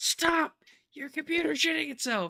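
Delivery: screaming, very high, very loud, alarmed. Streamer doing an impression of OBS warning them, in a screaming OBS voice. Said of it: "That is my impression of O B S when it's screaming at me".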